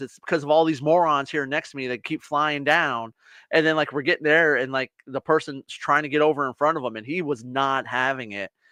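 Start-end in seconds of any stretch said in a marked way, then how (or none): none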